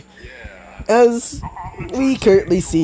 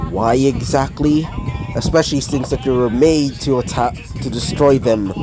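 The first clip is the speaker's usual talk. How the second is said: plain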